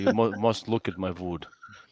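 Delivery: imitated Russian accent. Telling how Doc slips into an accent on long podcasts: Doc's Russian accent. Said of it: "he'll slip into his Russian accent".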